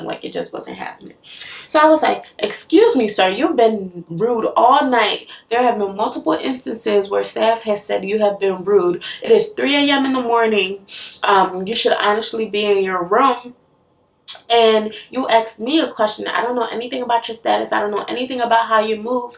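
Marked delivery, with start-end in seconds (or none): none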